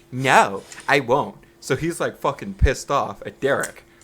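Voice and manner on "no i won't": put-on raised, meek, unassertive young teen girl voice. Retelling a man refusing someone's request, imitating a thirteen-year-old girl. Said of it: "it sounds like a thirteen-year-old girl".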